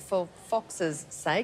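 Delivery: slow, drawn-out delivery.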